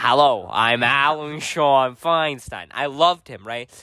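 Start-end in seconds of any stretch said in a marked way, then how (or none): 0.0-2.7 very slow, deliberate, drawn-out delivery. Retelling how a school benefactor talked: imitating Alan Sean Feinstein. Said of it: "he did talk like, he was".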